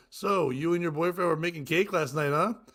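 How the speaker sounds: ordinary delivery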